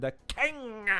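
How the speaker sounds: high, croaky, overacted king voice. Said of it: "coughing up Kermit the Frog while pronouncing the word king".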